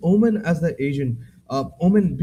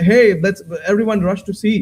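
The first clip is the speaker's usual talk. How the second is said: loud shout, carrying across the room. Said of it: "if one team shouts".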